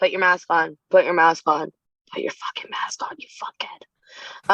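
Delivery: muttering under breath. Telling kids every class to put masks on, muttering under breath. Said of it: "which I say under my breath".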